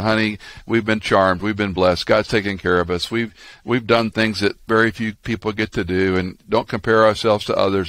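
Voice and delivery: ordinary talk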